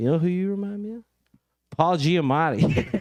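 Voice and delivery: put-on drunk woman's voice. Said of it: "She's also kinda drunk".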